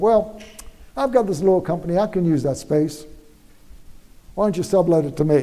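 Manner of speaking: usual speaking voice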